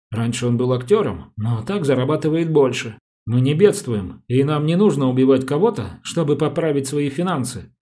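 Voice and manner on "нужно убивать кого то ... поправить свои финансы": ordinary delivery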